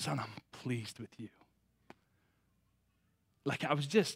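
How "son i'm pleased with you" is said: tender, gentle, barely audible whisper. Retelling words heard while kneeling at the altar: imitating a gentle whisper. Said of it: "so gently whispering to me".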